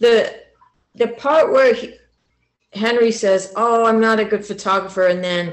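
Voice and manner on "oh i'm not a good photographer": normal talking voice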